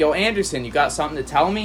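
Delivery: ordinary talk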